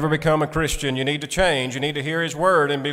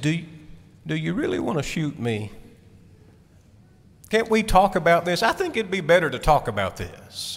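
calm, reasonable, gentle, mild talking bear voice; 2 semitones higher than usual. Retelling a fable, voicing the grizzly bear facing a hunter: speaking very softly. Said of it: "he spoke very softly".

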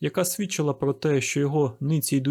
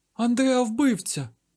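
sudden, high-pitched outcry; 9 semitones higher than usual. One of the two girls reacts to the man who burst in, exclaiming. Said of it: "вигукнула одна з тих дівчат".

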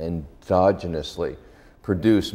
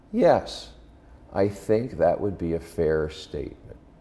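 soft-spoken, quiet, very firm. Quoting a cautious scientist's answer to a question: quiet but very firm voice. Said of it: "he says in this, you know, kind of quiet but very firm voice".

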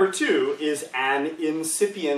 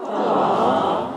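insincere, mock-sweet sarcastic aww, throat held closed; 4 semitones lower, 3 dB louder than usual. Showing the sound you make at a pet slug: sarcastic aww. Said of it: "your throat didn't open up".

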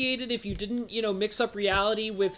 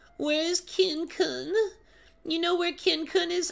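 put-on old lady voice, much higher; 8 semitones higher than usual. Voicing an old lady character in a game, in an old lady voice. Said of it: "Oh, it's an old lady".

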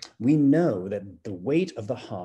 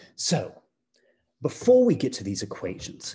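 put-on British accent held throughout; 2 semitones higher than usual. Opening the introduction to a lesson in a put-on british accent. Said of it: "I thought that I would see what I could do with a British accent".

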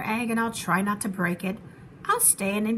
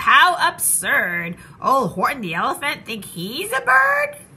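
loud, swooping, teasing, jeering taunting yell; 2 semitones higher, 6 dB louder than usual. Horton's friends yell up at him in the tree, taunting him. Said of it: "They taunted, they teased him, they yelled".

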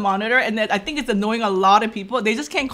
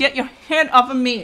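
snooty, sassy, put-on diva voice; 3 semitones higher than usual. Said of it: "I'm always diva to you".

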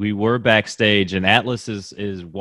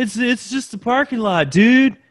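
put-on voice, pitched way up, loud; 5 dB louder than usual. Doing another impression after being asked: Kyle O'Reilly impression. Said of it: "do another Kyle O'Reilly parking lot impression".

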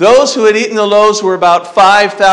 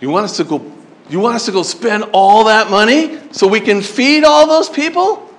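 sassy, attitude-filled talking back. Retelling how the disciples talked back to Jesus: imitating disciples talking back with attitude. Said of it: "talked back to Jesus with attitude".

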